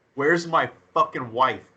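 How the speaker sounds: ordinary delivery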